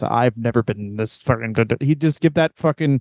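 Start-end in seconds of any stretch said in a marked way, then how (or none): 0.0-1.8 intense, deep, serious wrestling promo voice, low, emphatic. Describing a wrestler's promos before a pay-per-view: serious John Cena promo voice. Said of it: "he would talk like this".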